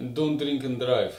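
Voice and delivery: put-on, mocking Russian accent. Signing off to viewers, the speaker adds a parting line in a mock russian accent. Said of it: "In a Russian accent".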